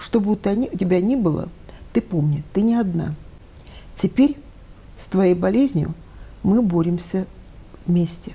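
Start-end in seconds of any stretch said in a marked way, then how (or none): none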